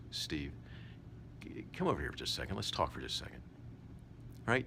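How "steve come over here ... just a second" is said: hushed, soft, calm near-whisper. Demonstrating how to speak to Steve: soft, calm voice. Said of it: "You want to talk in this manner, soft, calm".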